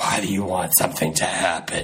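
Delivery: her voice put on and dropped very low. Retelling what she asked in reply, imitating her voice. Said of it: "That voice".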